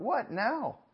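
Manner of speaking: very high, shrill, fed-up, exasperated outburst. Retelling throwing hands up at the driver, reenacting own frustrated outburst. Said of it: "and I'm frustrated".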